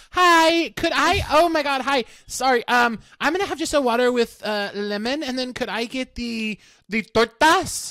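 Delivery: high, slow, halting, hesitant, drawn-out delivery.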